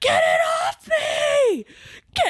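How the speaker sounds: put-on screaming. Retelling a squirrel landing on her leg: retelling a scream. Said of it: "I'm screaming bloody murder".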